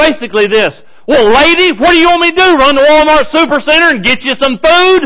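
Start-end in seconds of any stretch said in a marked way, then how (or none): 1.1-5.1 put-on wisecracking, sarcastic, smart-aleck tone, pitched up. Retelling a king's sarcastic answer to a woman: imitating a sarcastic king. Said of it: "he got really smart aleck".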